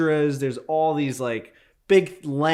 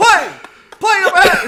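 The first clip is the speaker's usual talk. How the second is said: mock screaming, much higher and louder; 11 dB louder than usual. Retelling how the audio guy warned everyone about a plane; imitating someone screaming. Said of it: "And he's just screaming".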